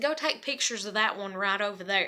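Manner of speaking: usual speaking voice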